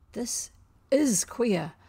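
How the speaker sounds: gasping. Smee reacts to the captain's order to free Tiger Lily; gasped. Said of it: "Smee gasped".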